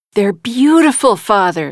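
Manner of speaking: ordinary delivery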